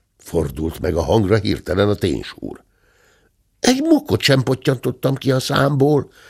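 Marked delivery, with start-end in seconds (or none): 3.6-6.1 high, earnest, insistent voice. The bear cub answers the question put to him, insisting. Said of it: "bizonykodott a bocs".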